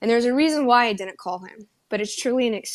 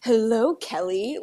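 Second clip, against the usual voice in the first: grandly theatrical, very dramatic and showy. Retelling greeting a man after lying to him: retelling a very dramatic greeting. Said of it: "very dramatically".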